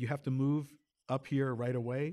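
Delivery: ordinary talk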